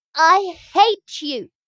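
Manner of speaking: very loud, high, choked, furious outburst. Reading a story aloud, a girl shouting at a woman: crying out in a choked voice. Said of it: "she cried in a choked voice".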